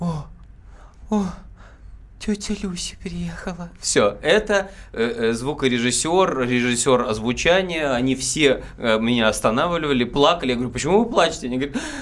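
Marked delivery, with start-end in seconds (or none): 0.0-3.7 surprised, breathy exhaled whisper. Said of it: "удивленно на выдохе делает так".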